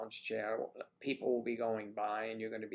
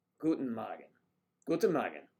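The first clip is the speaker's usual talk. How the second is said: put-on war-film German accent; 5 dB louder than usual. Speaker greets Sonia, who moved from Germany, in a Gestapo-movie German accent. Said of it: "my German accent is based on Gestapo movies".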